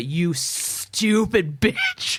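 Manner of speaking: building outburst, swooping pitch. Showing how the defendant wound up to an insult: imitating a wound-up insult. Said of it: "wound up to".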